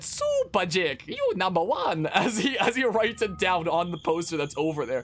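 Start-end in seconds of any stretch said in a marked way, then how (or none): 0.0-2.1 swooping, drawn-out character voice, wide pitch swings, slow. Retelling what a man said while signing a poster, in a Mario voice. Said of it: "He did it in his Mario voice".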